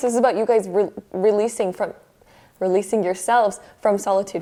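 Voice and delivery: rushed, too-fast talking, words running together. Explaining a card spread to viewers, talking too fast. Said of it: "I'm talking too fast".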